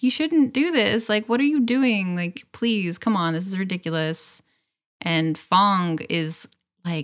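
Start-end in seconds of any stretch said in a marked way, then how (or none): 0.0-4.4 mock weepy, tearful, crying through tears. Retelling a scene where Aang cries and pleads: imitating Aang crying. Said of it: "Aang just starts crying and he's like".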